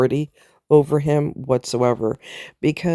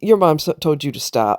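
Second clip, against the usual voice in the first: mock firm, stern voice. Retelling stepping in with a boy who ignored his mom: retelling a firm voice. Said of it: "with a firm voice".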